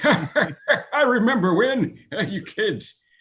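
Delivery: put-on very high, drawn-out old man voice. Recalling how he switched voices, in his old man voice. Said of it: "I switched to my old man voice".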